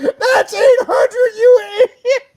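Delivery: very high, very loud, shrill screaming outburst. Retelling a seller screaming at the speaker over a price, retelling a scream. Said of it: "he screamed at me".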